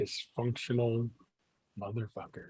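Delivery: muttered under breath. A DM, channeling a missing player's character, is muttering under breath. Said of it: "just muttering under my breath".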